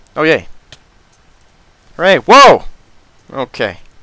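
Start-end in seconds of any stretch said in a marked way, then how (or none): 0.2-2.7 loud, swooping, excited whooping holler. Game streamer, just after pillaring up with blocks, yelling. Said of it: "Sorry for yelling".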